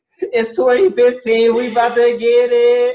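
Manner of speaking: mock hyped cheer, very high-pitched and loud.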